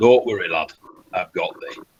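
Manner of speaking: soothing growl with northern vowels. Imagining a prayer to Bayek on a stressful day being answered: soothing northern growly Bayek voice. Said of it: "that soothing northern growly voice".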